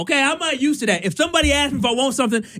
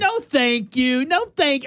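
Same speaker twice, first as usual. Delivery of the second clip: mock little child voice. Retelling refusing an offered goldfish, in a little kid voice. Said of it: "I did it in a little kid voice".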